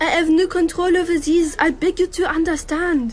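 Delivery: English with authentic-sounding put-on French accent. Asked by the group to show it, speaking English with a French accent. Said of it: "Lucy speaks English with an authentic French accent".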